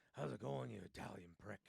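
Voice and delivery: put-on gruff, rough voice. Retelling a man's greeting to the men he's bonded with, in a gruff voice. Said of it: "gruffled voice".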